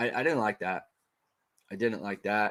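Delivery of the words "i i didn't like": usual speaking voice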